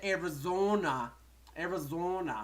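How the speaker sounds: Arizona said twice in a Canadian accent. Announcing a guest coming from Arizona: Canadian accent. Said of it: "I'm saying it like a Canadian".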